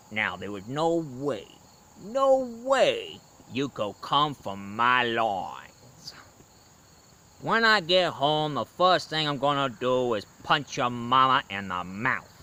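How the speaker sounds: slow, drawn-out Texas sheriff voice. Quoting a favorite movie line from the sheriff: Buford T. Justice voice. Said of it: "My favorite line that, uh, Buford T. Justice said".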